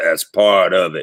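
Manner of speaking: rasping, low-pitched voice. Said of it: "gets that raspy voice on and goes".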